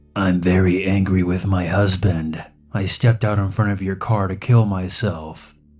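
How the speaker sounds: put-on raspy, slightly unhinged voice. Retelling what a woman in the headlights replied: imitating a raspy, slightly unhinged voice. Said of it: "in a raspy, slightly unhinged voice".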